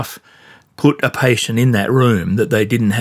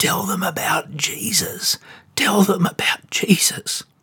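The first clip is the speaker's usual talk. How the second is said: faint, croaky, dry, parched whisper; 8 semitones higher, 7 dB quieter than usual. Retelling what a woman whispered as the speaker leant in, imitating a croaky dry whisper. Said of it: "croaky, dry, quiet voice, she kind of whispered".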